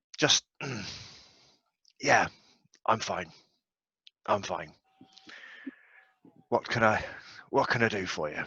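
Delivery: pained voice, full of pain. Voicing a character who is asked if he's all right, in a pained voice. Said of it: "it's quite a pained voice that he's got".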